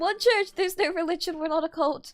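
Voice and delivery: trembling voice. Answering a viewer's question about the Church of the Holy Goose, in a shaky voice. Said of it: "I say with a shaky voice".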